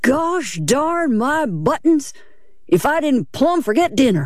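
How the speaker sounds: slow, lazy, high drawl of whimsical awe. A man straightens up abruptly from the pan; drawling. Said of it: "as he drawled".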